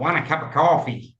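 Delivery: everyday New York accent throughout. Contrasting American accents, one line done in a New York accent. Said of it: "a New York accent where they go".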